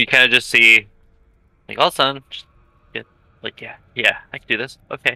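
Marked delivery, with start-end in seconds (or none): 3.6-5.2 quick, self-encouraging psyched-up delivery. Voicing a character who casts a spell before going in: psyching oneself up. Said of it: "psyching myself up".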